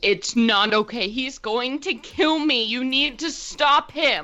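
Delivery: frantic, high-pitched, panicked scream. Voicing a beaten prisoner begging a player for help: screaming in panic. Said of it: "Silvar screams".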